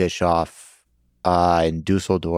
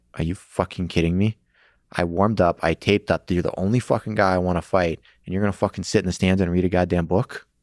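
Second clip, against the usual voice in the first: acted-out furious angry rant. Recounting confronting a man who would not fight him, retelling an angry outburst. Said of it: "I was so angry".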